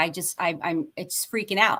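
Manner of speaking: plain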